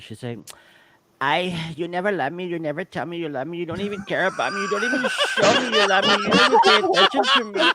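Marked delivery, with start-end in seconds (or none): 1.2-7.6 high, rising, mock-angry, mocking voice. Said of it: "this is Veronica".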